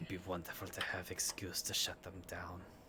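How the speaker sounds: barely audible, very quiet under-the-breath mutter. Voicing a character who remarks about shutting others down: said under his breath. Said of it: "says subtly under his breath".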